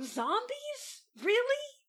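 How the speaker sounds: incredulous, disbelieving scoff.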